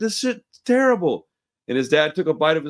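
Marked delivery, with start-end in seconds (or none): 0.0-1.3 pitched-up, fed-up, pissed-off angry complaint. Retelling a kid's complaint at a holiday dinner: imitating an angry kid. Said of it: "so he got pissed off".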